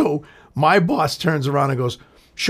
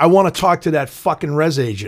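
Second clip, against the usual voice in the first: ordinary talk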